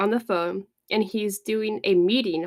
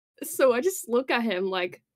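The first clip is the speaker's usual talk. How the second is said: ordinary delivery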